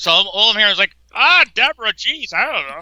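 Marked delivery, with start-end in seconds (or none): 1.1-2.8 high, swooping sitcom-husband voice. Imitating how a voice on a recording sounds: Ray Romano voice. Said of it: "It sounds like Ray Romano".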